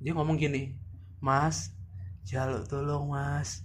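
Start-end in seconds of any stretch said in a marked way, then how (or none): 1.2-3.6 put-on soft, slow elderly old woman's voice. Retelling what a voice said late at night, in an old woman's voice. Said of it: "ngomong kayak suara nenek-nenek".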